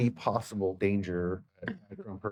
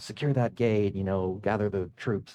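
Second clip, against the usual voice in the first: ordinary delivery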